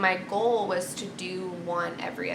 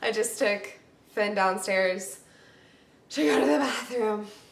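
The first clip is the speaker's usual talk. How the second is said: out of breath, breathless and winded. Speaker home alone with the dogs, talking while out of breath. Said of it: "I'm out of breath".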